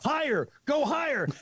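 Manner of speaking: play-acted scream, pitched high. Retelling what the company president screamed: imitating someone screaming. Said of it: "the president of the company screaming".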